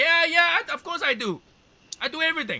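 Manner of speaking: very loud, very high-pitched put-on Mexican accent. Imitating how workers answer when asked if they do a job: imitating a Mexican accent. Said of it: "Did you just talk in a Mexican accent?".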